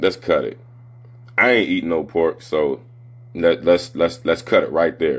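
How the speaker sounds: usual speaking voice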